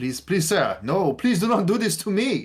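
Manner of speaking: put-on very high, loud, swooping French accent. Voicing a character for the group, with Frederick's French accent. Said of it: "Like this French?".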